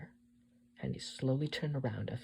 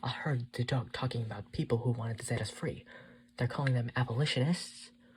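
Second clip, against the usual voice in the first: usual speaking voice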